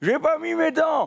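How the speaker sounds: put-on small, hoarse, very high old-lady voice. Telling how their grandmother answered about rugby, in a small raspy grandma voice. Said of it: "avec sa petite voix éraillée".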